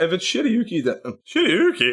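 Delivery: cracking voice. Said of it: "my voice just cracked".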